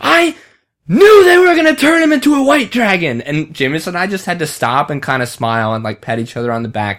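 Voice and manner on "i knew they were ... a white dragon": put-on very high, loud, thrilled excited shout. Recalling a walk after a few beers, the speaker acts out a friend's enthusiastic shout. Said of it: "Dylan like shouts".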